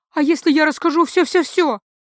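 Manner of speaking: high, quavering, shaky, trembling voice. A young man, just freed from a hand over his mouth, asks in a trembling voice. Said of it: "дрожа голосом уточнил юноша".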